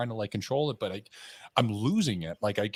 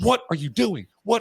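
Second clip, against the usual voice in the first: mock frantic, freaked-out, very loud and high; 10 semitones higher, 9 dB louder than usual. Retelling how a woman reacted when he took out his pistol, imitating someone freaking out. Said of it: "she's like freaking out".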